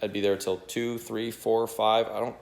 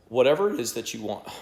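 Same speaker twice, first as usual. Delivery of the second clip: voice cracking into a squeak; 4 dB louder than usual. Making a video for viewers, the speaker's voice squeaks. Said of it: "my voice just squeaked".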